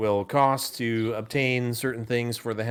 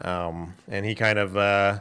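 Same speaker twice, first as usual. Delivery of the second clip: ordinary talk, nothing marked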